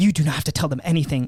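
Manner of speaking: put-on super intense urgent tone. Retelling how his date reacted when cops questioned them, imitating an intense warning. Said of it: "You like super like intense".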